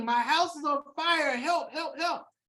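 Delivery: held-back, lightly urgent calling out. Acting out someone running from a burning house: mock yelling for help. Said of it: "you're yelling".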